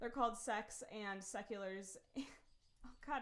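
laughing through the words. Speaker explaining names in a world they created, can't stop laughing. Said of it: "now I can't stop laughing about it".

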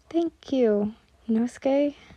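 ordinary talk

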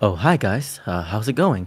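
very low, slow voice. Describing a content creator to another speaker: Sykkuno impression. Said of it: "he speaks like".

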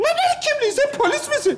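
high woman's voice.

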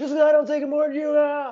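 play-acted shrill, high, rushed screaming at full volume. Retelling a housemate's fight, imitating someone yelling at the top of her lungs. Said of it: "yelling at the top of her lungs".

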